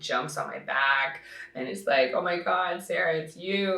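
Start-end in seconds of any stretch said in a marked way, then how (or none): 2.1-3.8 put-on crying voice, quieter. Retelling how a fan ran up crying: imitating someone crying. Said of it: "literally crying".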